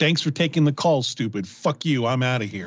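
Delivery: put-on angry, rude voice. On a call-in show, the host acts out the caller hanging up: mock attitude, imitating Brad. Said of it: "He's really got an attitude tonight".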